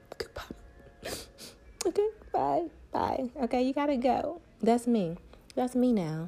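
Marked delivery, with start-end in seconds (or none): 0.2-3.3 soft, breathy, tearful, crying voice. Acting out opening the door for someone who hurt her, in a put-on crying goodbye. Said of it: "I'm going to cry as I open".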